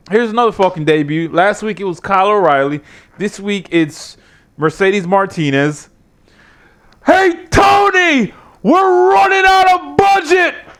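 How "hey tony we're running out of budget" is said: put-on wrestling promoter voice, higher. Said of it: "I'm gonna do Vince McMahon's voice".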